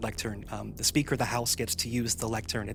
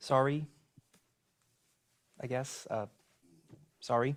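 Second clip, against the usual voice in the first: grudging, half-hearted, plainly insincere tone; 3 semitones higher than usual. Apologizing to a lectern after being asked to: insincere apology. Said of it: "Didn't sound like you meant that".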